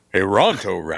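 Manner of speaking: broadcast-style radio announcer voice. Answering a request to say a menu item again: radio announcer voice.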